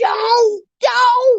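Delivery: very high shrieking scream. Speaker acting out how viewers yell at a scary movie, imitating screaming at the TV. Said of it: "You know how you screaming at the T V?".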